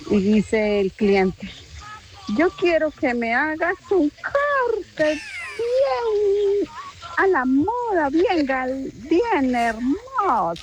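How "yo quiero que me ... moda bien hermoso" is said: slow, high, fake Colombian regional accent. Telling a joke, voicing the customer talking to the barber, put-on accent. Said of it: "¿Qué acento es ese?".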